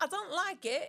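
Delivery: put-on acted English accent, childlike. Retelling a kid's reply to being put in timeout: imitating a child's english accent. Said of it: "Where did this English accent come from?".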